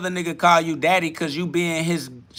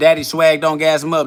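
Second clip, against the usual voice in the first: ordinary delivery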